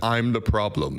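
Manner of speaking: put-on very droll, deadpan voice. Retelling how lawmakers quoted a pop lyric: imitating a really droll voice. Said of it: "in a really droll voice".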